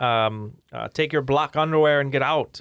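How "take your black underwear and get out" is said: bad, hammy tough-guy action-star movie voice. Discussing a quiz answer about Predator, doing a bad action-movie impression. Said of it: "that's a bad impression".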